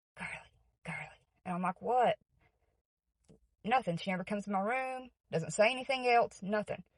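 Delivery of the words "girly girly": barely audible, soft, breathy whisper. Retelling how the speaker's mom woke them at night, whispering. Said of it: "you woke me up whispering".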